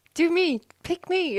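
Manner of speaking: very high, eager, keen schoolkid voice. Pretending the notes are a pupil at the front of the class: mock eager schoolkid voice. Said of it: "It's like the kid at the front of the class going".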